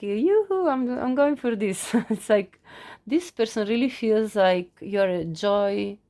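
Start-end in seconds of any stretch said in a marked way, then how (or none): 0.0-1.9 speaking through the giggles, laughing through words. Describing the Knight of Wands card from the deck, laughing while talking. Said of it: "sorry, I'm laughing".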